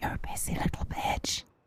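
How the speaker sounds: hushed, soft, close, quiet whisper. Leaning in to tease another speaker in the ear: whispering. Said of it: "just whisper in your ear".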